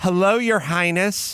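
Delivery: put-on impatient, snide, mean, sarcastic old woman voice. Retelling phone calls with a grandmother, imitating mean grandma. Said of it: "my grandmother was mean".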